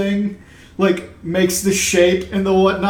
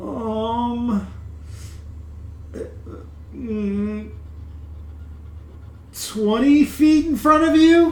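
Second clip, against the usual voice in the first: slow, unsure, hesitant voice with a drawn-out um; 4 semitones higher, 5 dB quieter than usual. Voicing a character who works out where something is: hesitant, thinking hard. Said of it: "he thinks real hard".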